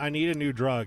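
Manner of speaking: plain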